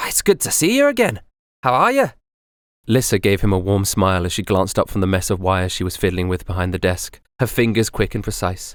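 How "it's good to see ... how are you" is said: very high, bright, chipper, sing-song voice. Reading a story, a woman greets Magnus as he comes in, in a chipper voice. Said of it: "a chipper voice greeted him".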